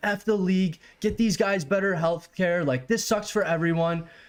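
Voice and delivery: mock furious rant, pitch up. Retelling a phone call, speaker re-enacts angrily screaming at Matt. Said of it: "I'm screaming at Matt over the phone".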